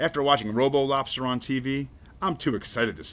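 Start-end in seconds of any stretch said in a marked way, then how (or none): none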